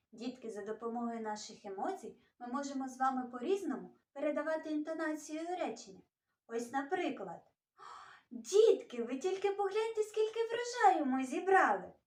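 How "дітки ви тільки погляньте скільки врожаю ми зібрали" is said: happy, glad, joyful, pitched-up delight. Teacher showing children how emotion changes a sentence, joyful tone. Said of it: "Як я сказала це речення? Так, радісно".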